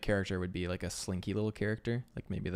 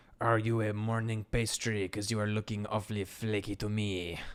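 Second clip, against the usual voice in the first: bad, mock put-on French accent. Voicing a chef character's taunt, joking about the accent: bad put-on French accent. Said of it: "my French accent is unrivaled".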